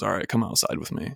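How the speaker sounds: grave, dead-serious, somber hushed whisper. Retelling what a woman checking their ticket said, imitating a somber tone. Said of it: "like really somber".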